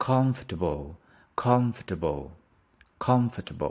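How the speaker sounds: comfortable with heavy stress on first syllable com. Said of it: "we stress on the first one".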